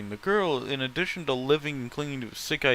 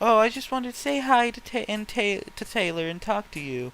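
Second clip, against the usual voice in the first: saccharine, syrupy, sweet, pitched-up voice; 8 semitones higher than usual. A narrator reads a girl's greeting, in a sweet, sugary voice. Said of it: "in a sweet, sugary voice".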